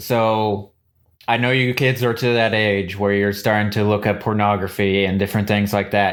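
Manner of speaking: ordinary talk, nothing marked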